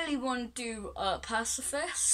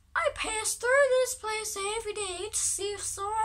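very high-pitched, motherly creature voice; 10 semitones higher than usual. Reading a game character's lines aloud: Goat Mom voice. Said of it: "But I'm gonna use it".

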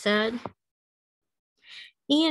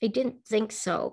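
plain reading voice

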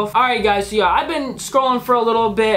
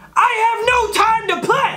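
play-acted shrill shout, pitched way up; 13 semitones higher than usual. Reading aloud a message from a seller: reading a yelled message. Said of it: "I whispered and then I yelled!".

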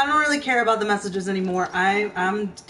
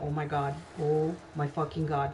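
frightened, scared, on-edge and tense voice; 6 semitones lower, 9 dB quieter than usual. Hearing hissing noises, the speaker reacts: heart racing, scared. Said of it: "My heart is fucking racing right now".

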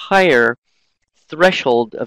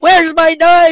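shrill, very high, very loud yell; 9 dB louder than usual. A parent imitates their stressed son from years ago, retelling a shout. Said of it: "He was shouting".

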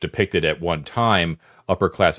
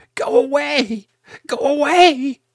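very high, very slow, drawn-out feminine voice; 6 dB louder than usual. As the players prepare to shine the light, the narrator uses a high-pitched female voice. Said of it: "a high-pitched, definitely female voice".

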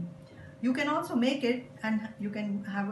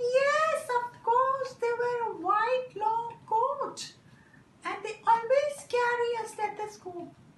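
squeaky, very high little puppet voice; 14 semitones higher, 4 dB louder than usual. A puppet answers, in a puppet voice. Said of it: "A puppet is used to explain".

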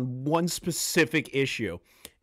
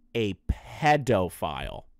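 very slow, very low, deliberate, drawn out word by word; 8 semitones lower than usual. Speaker answering a common defense, said real slow. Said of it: "I'm going to say it real slow".

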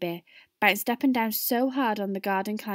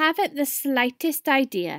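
insolent, rude, dismissive, pitched-up tone; 5 semitones higher, 3 dB louder than usual. A boy answers the teacher's question to the class: rude. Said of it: "Hamish Bigmore was being ruder than ever".

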